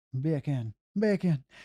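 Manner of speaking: Jamaican-accented voice. Speaker demonstrates an accent joke to the listener, jamaican accent. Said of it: "beer can in a British accent sounds like bacon in a Jamaican accent".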